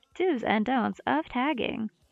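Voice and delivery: put-on robotic text-to-speech voice. Reading a title aloud, in the TikTok robot voice. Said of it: "hear it in the, the TikTok robot voice".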